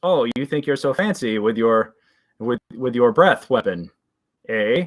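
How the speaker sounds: goblin shaman voice talking through a chuckle. Voicing a goblin shaman addressing a player: chuckling goblin shaman voice. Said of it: "The shaman chuckles at you and says".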